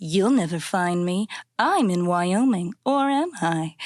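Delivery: slow, sensual, drawn-out put-on voice. Recalling a childhood computer game's villain, doing a put-on sensual Carmen voice. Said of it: "She talks like this and is like".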